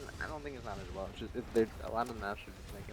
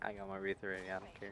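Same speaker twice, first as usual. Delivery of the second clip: usual speaking voice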